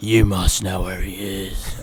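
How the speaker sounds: masked comic-book vigilante superhero voice. Imagining Batman pinning the speaker against a wall: Batman voice. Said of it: "And he'd be like".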